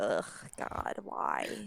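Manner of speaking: miserable, breathy, whispered hungover groan. Describing a hungover character wanting to stay in bed: acting hungover and miserable. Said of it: "the Hawk is a little hungover".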